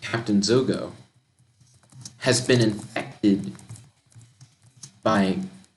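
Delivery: ordinary talk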